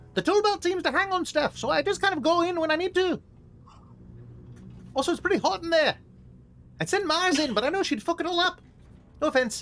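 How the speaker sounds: very high-pitched character voice, pushed way up. Player speaks in character during a tabletop game, in a high-pitched Cadmus voice. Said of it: "Cadmus in this high pitched voice".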